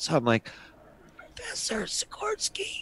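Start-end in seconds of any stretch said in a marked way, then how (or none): 1.4-2.8 put-on sick voice, hushed, breathy, whispery and hoarse. Retelling pretending to be sick when greeting the professor, faking a sore throat. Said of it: "I have like a sore throat".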